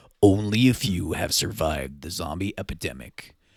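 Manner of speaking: very low, deep movie trailer narration voice. Reading the app's opening text aloud, in a movie trailer voice. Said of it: "I'll put on my movie trailer voice".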